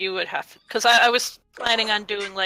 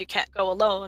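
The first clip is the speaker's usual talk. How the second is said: usual speaking voice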